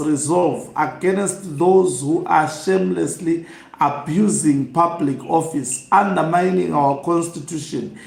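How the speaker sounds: normal talking voice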